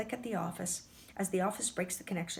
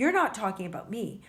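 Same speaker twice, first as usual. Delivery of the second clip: ordinary delivery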